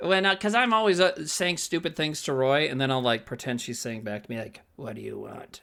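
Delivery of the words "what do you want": very low, very quiet, deep, hushed lizard voice. Showing the voice used when pretending the pet lizard answers back, [name]'s lizard voice. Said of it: "That's the lizard voice".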